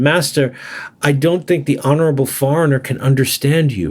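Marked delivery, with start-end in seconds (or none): none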